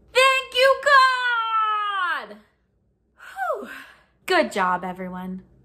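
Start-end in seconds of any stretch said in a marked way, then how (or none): 0.1-2.3 all-out very high loud shout, God drawn out. Leading an audience in a call-out, shouting as loud as possible. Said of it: "raise your voice as loud as you can".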